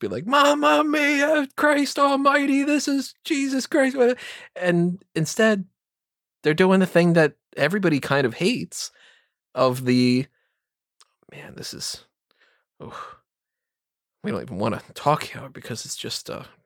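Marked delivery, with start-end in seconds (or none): 0.3-4.0 very high, near-explosive exasperated outburst. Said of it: "having an aneurysm of everything".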